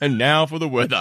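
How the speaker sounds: on-air radio announcer broadcaster voice. Hosting a spoof hidden-news broadcast, introducing the weather: radio announcer voice. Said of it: "we have our radio voices".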